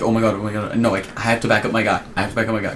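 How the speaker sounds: ordinary delivery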